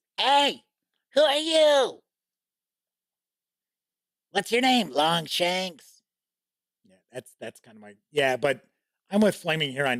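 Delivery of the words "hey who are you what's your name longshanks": high-pitched, slow, put-on goblin voice. Doing voices in a role-play game, speaking as a goblin: goblin voice. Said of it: "It's usually my goblin voice".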